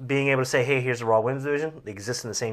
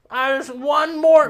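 mock whining wrestler voice, higher and louder; 7 dB louder than usual. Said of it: "he's got that weird whine thing".

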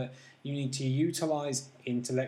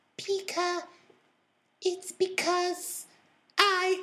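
put-on girly voice pitched as high as possible, spoken slowly. Retelling a movie scene where Pikachu answers Ash, girly high-pitched Pikachu voice. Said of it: "highest pitched feminine voice Pikachu could muster".

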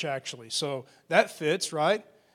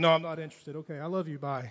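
put-on dismissive tone, lower and quieter; 2 semitones lower, 4 dB quieter than usual. Retelling a call with a telemarketer, imitating own phone brush-off.

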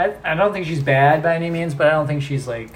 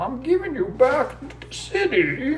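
very high-pitched, slow put-on voice; 11 semitones higher than usual. Playing a card game after the other player mentions the Bane voice: Bane voice. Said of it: "your Bane voice".

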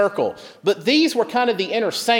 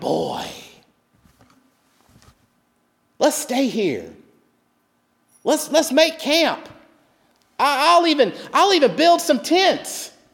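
high-pitched, amazed, wonder-filled outburst; 8 semitones higher than usual. Retelling how Peter spoke on the mountain: acting awestruck. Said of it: "Peter all of a sudden becomes awestruck and he says".

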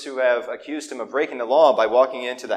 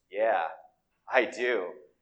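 secretive, in-on-it, conspiratorial tone; 4 semitones lower, 6 dB quieter than usual. Retelling leaning forward to answer back: imitating a conspiratorial tone. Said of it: "in a way that was equally conspiratorial".

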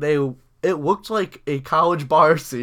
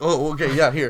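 put-on panicked, flustered, hurried speech. Retelling how a hurried man handed twenty bucks back: imitating someone panicking. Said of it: "panicking and in a hurry".

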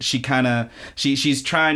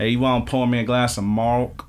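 strange, oddly done, put-on country accent. Co-host riffing on a strange name, imagining someone asking in a weird country accent. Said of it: "with a really weird, like, I don't know, country accent".

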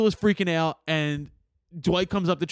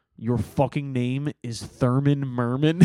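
slow delivery, every word drawn out; 4 semitones lower than usual. Retelling a movie scene about a kid's name: Billy Bob Thornton voice. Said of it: "Billy Bob Thornton in his voice just goes".

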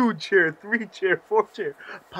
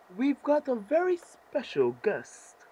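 put-on soft, high British accent, announcer voice; 7 semitones higher, 5 dB quieter than usual. Imitating what the announcer said, in a British accent. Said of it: "she had a British accent".

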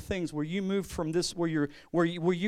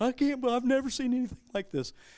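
play-acted, high-pitched bawling, sobbing through words; 6 semitones higher than usual. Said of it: "she's bawling".

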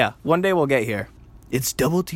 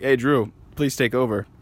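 ordinary delivery

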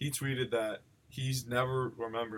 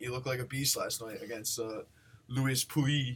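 clumsy, attempted French accent. Speaker recapping a tennis match, trying a French accent on the opponent's name. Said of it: "French impression there".

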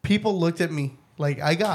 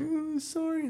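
very high-pitched, tearful, crying voice; 12 semitones higher, 7 dB quieter than usual. Retelling an apology made after a hair pull: imitating a crying apology.

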